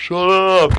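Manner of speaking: loud yelling. Retelling the audience's reaction: imitating people yelling.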